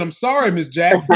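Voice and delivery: normal talking voice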